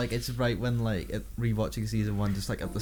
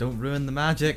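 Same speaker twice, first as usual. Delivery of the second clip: ordinary talk, nothing marked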